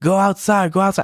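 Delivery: play-acted, high, loud yelled voice. Retelling how the wrestler yelled instructions during the match: imitating someone yelling. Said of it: "he yells at me".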